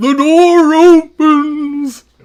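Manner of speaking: very high, loud, belted-out dopey voice. Mimicking how someone talks, in a Patrick Star voice. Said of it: "He does sound like Patrick Star from SpongeBob".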